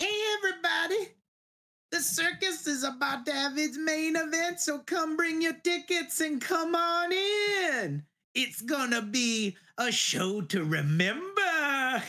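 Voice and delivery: clown voice, chuckling and laughing. Voicing a clown who calls everyone into the circus tent: chuckling clown voice. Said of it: "he chuckles Von Doom, goes".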